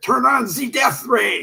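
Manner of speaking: put-on loud, shouted delivery in a German accent. Recalling the German-speaking lady in a movie ordering the death ray: retelling a German-accented yell. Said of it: "she would yell with a German accent".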